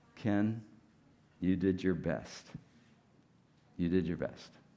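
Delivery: mock whispered voice. Retelling a whispered voice heard during a quiet time: imitating a whispered voice. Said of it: "I hear this whispered voice again".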